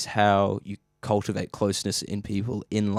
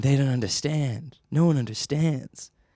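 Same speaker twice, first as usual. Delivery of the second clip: pitched-up, unhinged madman rambling lament; 5 semitones higher than usual. Picturing himself wandering a beach in a tattered suit: imitating a rambling madman. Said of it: "I'll be wandering around Venice Beach in, in a tattered suit".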